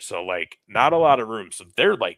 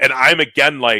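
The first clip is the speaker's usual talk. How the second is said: plain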